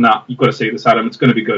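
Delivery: ordinary talk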